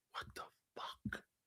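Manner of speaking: barely audible whispered mutter under the breath. Retelling what people said after the firing announcement: imitating muttering under breath. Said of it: "under their breath going".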